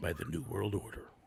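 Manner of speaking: wrestling commercial announcer impression. Chatting with friends about wrestling intros, doing the New World Order commercial voice. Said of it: "He does a pretty good impersonation of that one".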